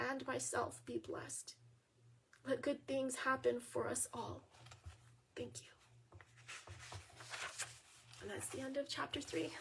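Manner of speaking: hushed, near-whispered, soft, breathy, emotional voice. Finishing reading a chapter aloud to listeners, getting a little emotional. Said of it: "I'm getting a little emotional".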